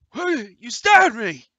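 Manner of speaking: shrill, loud, panicked shriek. Voicing a stabbed thug in a fight: panicked stabbed thug. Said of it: "he gets all panicked".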